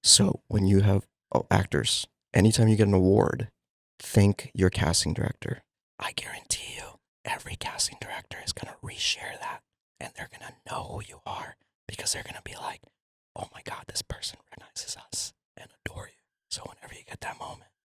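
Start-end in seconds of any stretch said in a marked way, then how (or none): 6.0-17.6 whispered, secret-sharing tone. Sharing a secret tip for actors, the speaker speaks whispered as a secret. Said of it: "I gotta whisper it as a secret".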